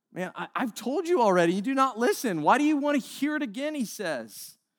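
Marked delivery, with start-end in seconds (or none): 0.1-3.7 high, fed-up, sarcastic and exasperated voice. Retelling the healed blind man answering the Pharisees: acting sarcastic. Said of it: "sarcasm isn't in the Bible".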